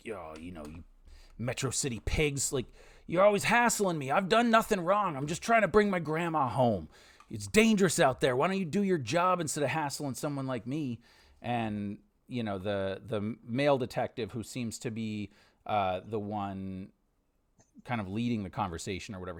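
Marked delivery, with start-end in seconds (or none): 0.0-11.0 put-on combative, defiant, belligerent young man's voice. Retelling a young man's retort to detectives, mock-belligerent young man. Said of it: "he's belligerent".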